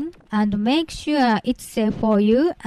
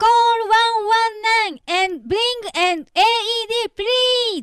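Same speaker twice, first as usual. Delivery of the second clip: shrill, very high, loud cry; 12 semitones higher than usual. Demonstrating how to summon help for an unresponsive victim: loud call for help. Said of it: "ask for help in a loud voice".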